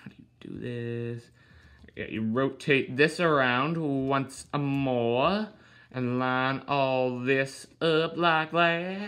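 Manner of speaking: cowboy voice with a long, drawn-out drawl. Explaining how to fold up a bike: cowboy voice. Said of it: "I'll stop talking like a cowboy".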